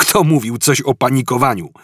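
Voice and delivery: sharp, biting, snappy, snapped delivery. Told by his companion not to panic, snapping back. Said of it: "Odwarknął Artur".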